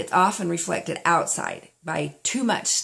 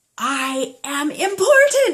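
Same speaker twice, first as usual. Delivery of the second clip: explosive, high, sudden burst of energy; 9 semitones higher, 4 dB louder than usual. Demonstrating an affirmation to listeners: bursting out. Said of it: "and burst out".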